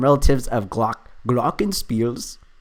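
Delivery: rough, loose, amateur put-on German accent. Reading a clue aloud while solving: attempted german accent. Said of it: "I don't even know if this is a German accent".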